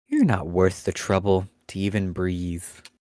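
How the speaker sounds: low, reverberating, echoing voice. Describing a creature speaking to you by telepathy without moving its mouth: reverberating telepathic voice. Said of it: "in a voice that reverberates within your head".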